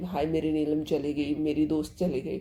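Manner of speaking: normal talking voice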